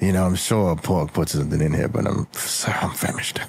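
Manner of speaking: muttering. Starving character decides to eat it anyway, mumbling to himself. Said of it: "he mumbles to himself".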